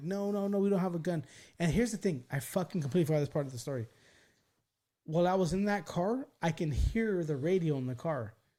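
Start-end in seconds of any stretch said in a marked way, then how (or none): 0.0-1.2 put-on, mild, restrained hint of a scream. Speaker retells screaming at the top of their lungs: retelling a scream. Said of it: "screaming top of my lungs".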